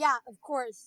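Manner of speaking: heavily, very sarcastic tone. Retelling how people in a group chat replied: imitating a sarcastic reply. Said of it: "In a very sarcastic way".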